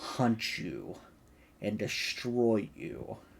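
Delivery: low, slow, quiet menacing voice. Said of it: "lean kind of into his ear".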